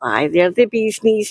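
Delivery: normal talking voice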